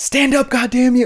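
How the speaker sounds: put-on high yelling.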